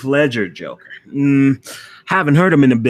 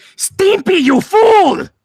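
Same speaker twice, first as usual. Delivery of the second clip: very high, loud, shrill yell; 7 dB louder than usual. Answering a request for an impression of Ren from Ren and Stimpy. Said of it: "Ren from Ren and Stimpy".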